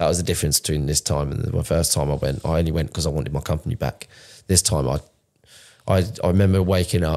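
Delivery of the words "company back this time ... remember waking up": ordinary talk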